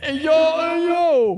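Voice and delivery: very high, slow, drawn-out drawl. Doing Andrew Dice Clay doing an impression of John Travolta. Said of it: "Andrew Dice Clay doing an impression of John Travolta".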